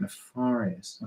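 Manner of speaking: very quiet hushed speech, lips barely moving. Leading the audience in repeating a word, very soft, mouth barely moving. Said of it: "You don't even move your mouth when you do it".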